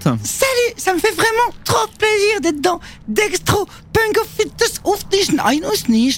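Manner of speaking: very high, tiny, swooping, sing-song squeaky cartoon voice. On a Thursday music show, a newly arrived little voice greets the hosts, Smurfette voice. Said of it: "c'est la voix de la Schtroumpfette".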